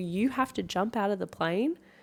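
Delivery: ordinary talk, nothing marked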